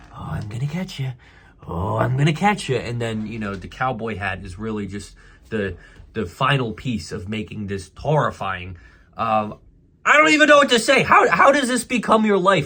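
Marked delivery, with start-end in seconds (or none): 0.1-2.7 imitated creepy serial-killer voice, flirting. Mocking a man's flirting, doing a mock creepy serial-killer voice. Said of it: "some sort of serial killer that's chasing women".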